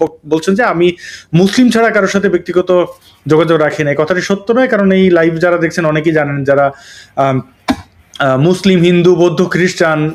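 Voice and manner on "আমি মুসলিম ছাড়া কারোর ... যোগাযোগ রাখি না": ordinary talk, nothing marked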